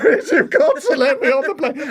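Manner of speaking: very high, loud, tearful and desperate crying voice. Retelling begging on his knees to be let onto a plane home, retelling a crying plea. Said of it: "literally begging on my knees, crying, going".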